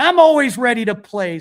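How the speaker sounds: loud, full screaming yell, acted out. Retelling a player screaming at the dugout after a homer: imitating Rizzo screaming. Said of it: "he's screaming".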